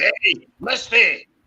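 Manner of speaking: calling out. Calling out to misty to wake her up with the speaker's voice, wake-up call. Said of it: "I'll wake you up, Misty, with my voice".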